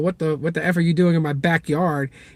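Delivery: normal talking voice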